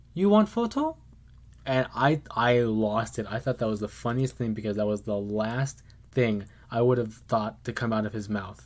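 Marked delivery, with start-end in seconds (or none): 0.2-1.0 tiny faint squeak, very high-pitched. Retelling what a Mickey Mouse said as they walked by, in a faint high-pitched voice. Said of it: "in like a faint, high pitched voice".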